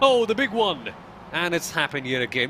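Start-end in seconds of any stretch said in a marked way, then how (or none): 0.0-0.9 pitched-up race commentator style delivery. Calling a big multi-car crash in a race: Rick Allen voice. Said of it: "I'm gonna do my best Rick Allen voice".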